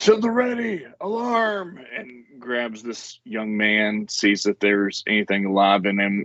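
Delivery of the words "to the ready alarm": very high, alarmed shouting cry. A character pulls his axe and shouts an alarm. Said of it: "and shouts".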